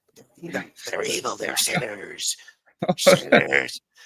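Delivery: evil, sinister demon voice, hissing and repeating. Joking about someone hearing voices: put-on demonic voice. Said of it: "he's hearing demonic voices, like".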